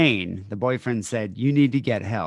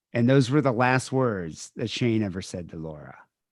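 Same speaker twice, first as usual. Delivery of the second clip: ordinary delivery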